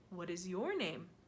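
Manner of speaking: plain reading voice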